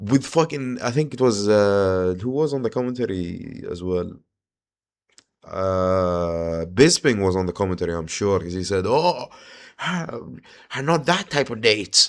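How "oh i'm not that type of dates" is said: put-on clumsy, poor British accent, slow, high, drawn out. Retelling what Bisping said on commentary, in a bad Bisping British accent. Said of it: "I can't do a British accent".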